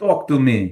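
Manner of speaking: high, loud Russian accent.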